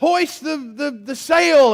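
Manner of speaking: excited, high, loud, acted ship captain's shout. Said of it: "he's shouting out maritime commands".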